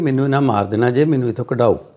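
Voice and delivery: ordinary talk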